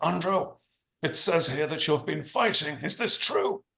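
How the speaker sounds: put-on harsh, stern Belfast accent. Retelling his father glaring at him over a letter from school, harsh Belfast accent. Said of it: "he said in his harsh Belfast accent".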